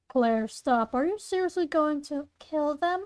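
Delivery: normal talking voice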